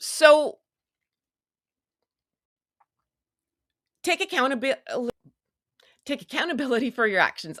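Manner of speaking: riled up, tripping over words. Urging people to take accountability, so riled up they can't talk. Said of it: "I can't even talk. I'm so riled up".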